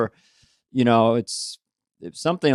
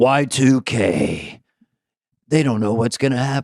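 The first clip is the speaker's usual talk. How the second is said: TV commercial announcer voice. Showing how a television ad announcer would promote the movie: tv ad announcer voice. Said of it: "with an announcer promoting Y two K".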